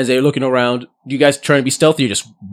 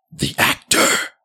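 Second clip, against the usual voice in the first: sudden, excited screeching cry. Voicing a creature that spots the actor: screeching. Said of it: "you hear them screech".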